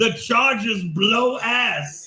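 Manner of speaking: drawn-out, very slow, deliberate delivery. Repeating a famous line from a clip about the Chargers: imitating his famous clip. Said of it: "I'll do it again".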